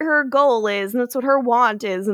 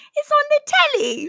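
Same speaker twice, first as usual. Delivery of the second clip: fake London accent, higher. Joining the others' joke accent: put-on London accent. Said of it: "You talk like you're from London".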